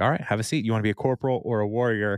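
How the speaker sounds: ordinary delivery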